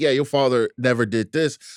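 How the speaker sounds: acted sarcastic delivery. Retelling a line the mom says in the trailer: imitating a sarcastic remark. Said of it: "at first it seems like kinda sarcastic".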